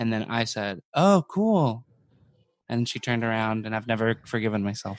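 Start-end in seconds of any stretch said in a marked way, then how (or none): 0.9-1.8 heavy, biting sarcasm. Retelling own past reply to a girl at the pool: imitating own sarcastic reply. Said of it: "you said it sarcastically".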